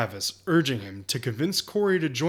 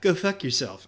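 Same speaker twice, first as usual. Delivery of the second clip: put-on childish little kid voice. Retelling what Travis said before he walked away, imitating Travis's kid voice. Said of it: "saying it in a kid way".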